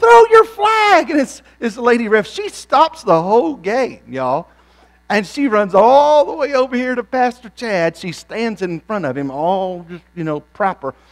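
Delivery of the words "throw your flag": very high-pitched, shrill, loud screaming. Retelling yelling at a soccer referee: imitating own screaming. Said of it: "I'm screaming".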